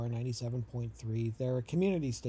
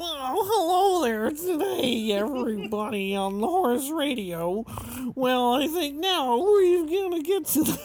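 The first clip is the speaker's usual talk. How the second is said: shrill, blaring ridiculous put-on voice, very high and loud; 14 semitones higher, 9 dB louder than usual. Imitating a man on the horse radio in a ridiculous put-on voice. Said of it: "in this ridiculous voice".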